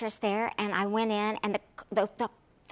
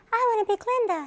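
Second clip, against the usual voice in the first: put-on very high-pitched childlike voice; 12 semitones higher, 4 dB louder than usual. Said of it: "in the same exact voice as she has now".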